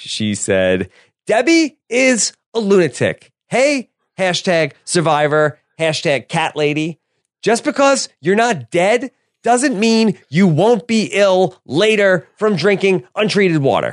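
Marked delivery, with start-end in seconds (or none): 1.3-13.9 lifted pitch riding a distinct speech cadence. Reading a contestant's tweets aloud as an impression: Eliza impression. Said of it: "the burgeoning Eliza impression".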